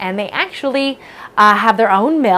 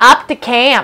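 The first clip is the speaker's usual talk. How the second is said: loud, terrible put-on Maine accent on up to camp; 2 semitones higher, 5 dB louder than usual. Saying a phrase the way Mainers would, in a terrible Maine accent. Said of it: "that was a terrible Maine accent".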